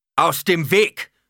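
very high, thunderous, booming roar. Narrator reading a voice that roars at the Fremen, thunderous roar. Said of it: "Eine Donnerstimme brüllte".

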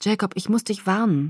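ordinary talk

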